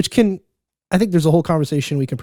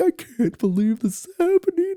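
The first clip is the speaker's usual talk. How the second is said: very high-pitched, almost crying, disbelieving voice. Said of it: "I'm like".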